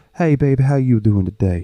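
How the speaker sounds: high, effeminate-sounding voice. Describing how Mikey talks, imitating Mikey's effeminate voice. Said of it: "has the most effeminate voice you've ever heard".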